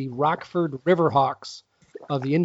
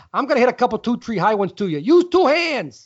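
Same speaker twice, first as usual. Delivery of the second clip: Chicago accent impression, pitched higher, louder; 7 semitones higher, 5 dB louder than usual. Imitating the coach running fielding practice for the Aussies, Mike Young impression with Chicago accent. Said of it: "That was my Mike Young impression".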